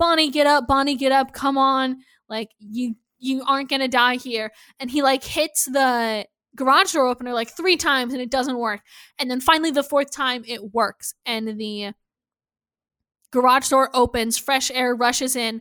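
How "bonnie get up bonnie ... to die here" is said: put-on yelling. Retelling what a man yelled to a woman in the garage, retelling a yell. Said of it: "he's yelling like".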